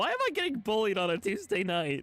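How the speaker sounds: voice cracks midway. Starting a game with others, the speaker protests: voice crack. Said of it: "that was a voice crack".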